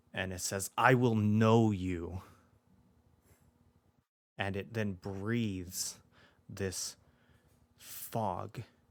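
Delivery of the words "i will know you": very loud, crushing, oppressive booming voice. Narrating a story, a voice speaks again as they face the door: loud, oppressive voice. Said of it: "this time louder and more oppressive".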